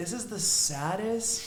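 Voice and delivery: put-on loud, high speech squeezed out through laughter. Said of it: "she started laughing so hard".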